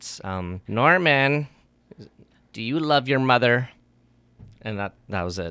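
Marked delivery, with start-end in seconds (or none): 0.2-3.7 put-on corpse character voice. Imitating a corpse talking in a mother's voice, put-on mother's voice. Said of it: "I'm playing the corpse that's talking in the voice, in his voice, in the mother's voice".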